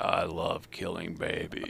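deep, gravelly, whispered voice. Retelling how an interviewed man answered a reporter, in a gravelly, deep voice. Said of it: "went into this grovelly, deep voice".

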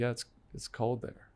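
imitated Eastern European accent. Retelling a woman's reply about where she's from, in an Eastern European accent impression. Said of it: "Not Middle Eastern, Eastern Europe".

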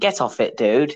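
put-on casual Essex accent. Imagining Obi-Wan as coming from Essex, doing an Essex-accent Obi-Wan voice. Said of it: "That's my Essex impression".

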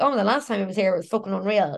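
normal talking voice

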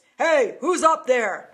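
big, booming, loud male shout. Retelling being caught upstairs over a heat register, imitating a booming male voice. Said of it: "I hear this booming male voice".

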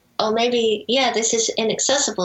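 ordinary talk

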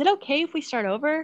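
put-on sad little voice. Retelling a game's sound clip played after losing, imitating Nancy's sad voice. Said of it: "Nancy says in like the sad voice".

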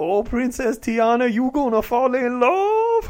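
loud, high Cajun voice, "love" drawn out. Imagining a Cajun character in Princess and the Frog: Kathy Bates impression. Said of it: "Kathy Bates being like".

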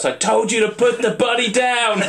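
very high-pitched, furious yelled shout. Retelling a film scene just before a character shoots another, retelling a shout. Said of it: "he shouts".

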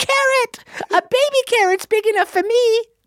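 tiny, very high, squeaky horse voice. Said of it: "So he'd be like".

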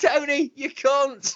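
put-on shouting. Imitating passers-by in the street: imitating people shouting. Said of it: "Like this".

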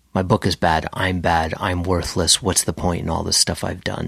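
normal talking voice

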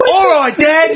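put-on clean-cut, wholesome kid voice in commercial style. Acting out an imagined old TV ad: wholesome dad in a TV ad. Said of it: "this wholesome family just driving to Barnacle".

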